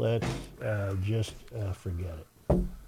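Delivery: hushed, low, soft voice.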